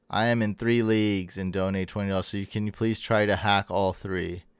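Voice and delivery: ordinary talk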